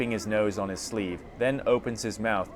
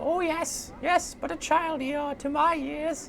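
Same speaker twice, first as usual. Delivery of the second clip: put-on very high, toothless old crone voice. Narrator voicing a toothless old crone answering the player, in a crone voice. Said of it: "I'm not going to do that voice".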